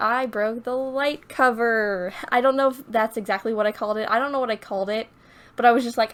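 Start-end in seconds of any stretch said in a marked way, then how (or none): none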